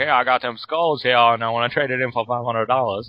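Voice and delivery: put-on Louisiana Cajun accent. Describing a Louisiana pawn show, a speaker imitates people coming in, in a Cajun accent. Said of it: "You gotta get that Cajun accent".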